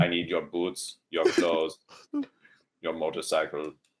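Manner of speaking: put-on thick Austrian accent. Acting out a scene of arriving from the future, in a thick Austrian accent. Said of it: "I would speak in a thick Austrian accent".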